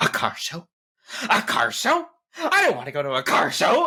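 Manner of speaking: mock furious, high, swooping angry shouting outburst. Recounting a scene where she yells at Red, imitating an angry yell. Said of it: "And she like yells at Red".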